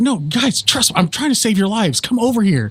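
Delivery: high voice of a tree creature character. Recounting a game session, a player quotes a figure who popped up in a tree. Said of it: "pops up in a tree. He's like".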